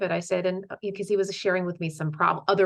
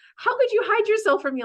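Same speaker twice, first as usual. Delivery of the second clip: very high, loud, playful, joking shout; 5 dB louder than usual. Recounting a man who jokingly yelled at her, retelling a joking yell. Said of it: "but he yelled at me".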